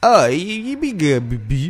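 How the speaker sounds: derisive, slow, sing-song caricature drawl. Mocking people who repeat things they just heard: mocking impression of people. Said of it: "That's a good impersonation".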